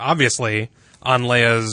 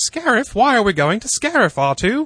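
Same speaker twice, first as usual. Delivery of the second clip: very high, wildly up-and-down, swooping sing-song voice; 11 semitones higher than usual. Recounting a scene with R2 on Yavin 4: imitating people in the hangar. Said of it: "That's a pretty good impression".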